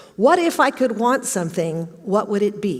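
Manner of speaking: normal talking voice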